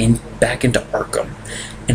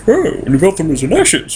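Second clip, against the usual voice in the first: loud, cheery put-on British voice. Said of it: "He sounds too cheery".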